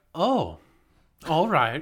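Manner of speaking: put-on sassy, put-out, loud, swooping annoyed Irish accent. Retelling the Irish voice assistant's reply: imitating mad Irish Siri. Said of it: "The Irish one gets mad".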